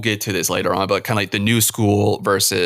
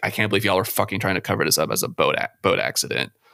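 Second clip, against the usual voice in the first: acted, utterly disgusted outburst; 3 dB quieter than usual. Retelling a film scene: imitating Hooper's profound disgust. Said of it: "his profound disgust when he's like".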